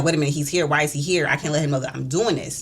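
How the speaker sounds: ordinary delivery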